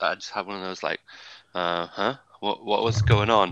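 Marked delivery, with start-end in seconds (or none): 1.5-3.5 mock groggy, half-asleep voice. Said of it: "half asleep".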